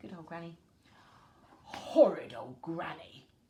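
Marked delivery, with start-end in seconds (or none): 1.6-3.3 low, loud, growling storybook wolf voice. Reading a story aloud, voicing the wolf after Granny runs off: growling wolf voice. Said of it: "the wolf growled".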